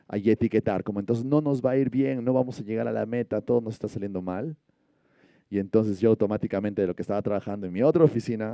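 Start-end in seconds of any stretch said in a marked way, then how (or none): none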